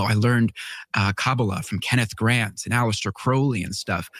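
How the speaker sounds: usual speaking voice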